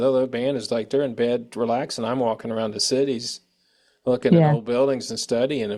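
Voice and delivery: ordinary talk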